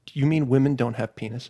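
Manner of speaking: put-on innocent, sincere young child voice. Retelling a boy's question in their fifth-grade class, imitating Purnell's innocent earnestness. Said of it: "in all honestly and just pure innocence".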